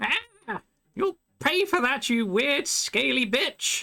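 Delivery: very high, screeching voice. In a game, an enemy just hacked by a silver-aura blade cries out at her attacker, screeching. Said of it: "she screeches out just like".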